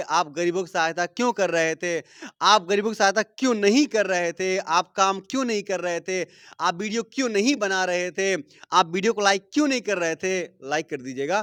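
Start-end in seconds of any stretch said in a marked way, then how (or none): none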